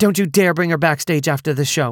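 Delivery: curt, clipped, fast delivery. Reading a story, a woman answers the narrator on the phone: clipped. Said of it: "she clipped".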